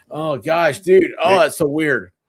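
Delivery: ordinary delivery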